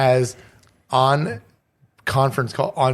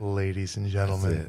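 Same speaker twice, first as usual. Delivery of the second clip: silky, mellow, seductive voice, deep and smooth; 5 semitones lower, 8 dB quieter than usual.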